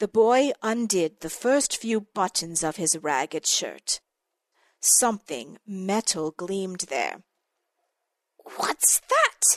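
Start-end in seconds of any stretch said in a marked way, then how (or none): 8.6-9.6 hissing, pitched very high. Seeing something metal gleam under a boy's opened shirt, a character asks, hissing. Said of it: "Baba Yaga hissed".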